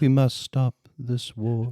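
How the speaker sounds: low-key, quiet, soft-spoken voice. Recalling a film performance, imitating its quiet Lincoln voice. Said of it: "Daniel Day-Lewis doing his quiet Lincoln voice".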